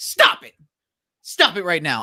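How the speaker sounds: put-on annoyed, exasperated, swooping scolding tone. Retelling what they say to british actors with american accents: imitating own mad scolding. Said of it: "It just makes me mad".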